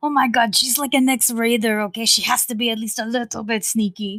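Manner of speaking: loud whisper, half yelled. Voicing a character in a game scene who is whisper-yelling to a companion: whisper-yelling. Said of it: "Estrella is trying to whisper yell".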